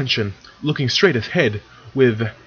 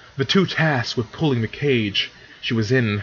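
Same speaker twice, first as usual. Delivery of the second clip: usual speaking voice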